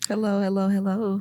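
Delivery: very quiet, soft low voice. Greeting the host at the start of the episode, said very quietly. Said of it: "You said that shit so low".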